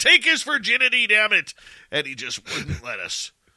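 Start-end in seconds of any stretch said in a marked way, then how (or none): 0.0-1.5 shrieking, very high and loud. Retelling a traffic stop, yelling at the cop: retelling yelling at a cop. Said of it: "him and I are yelling at the cop".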